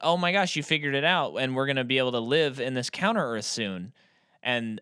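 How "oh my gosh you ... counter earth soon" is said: plain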